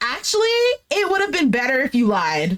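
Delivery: ordinary talk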